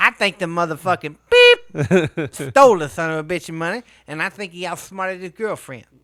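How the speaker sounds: loud, booming voice at full volume. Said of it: "I just read the whole story like [name]".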